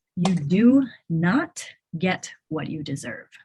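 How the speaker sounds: slow, deliberate, spelled-out pacing. Speaking to a listener so they can write the line down, speaking slowly. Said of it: "I'll say it slowly so you can write it down".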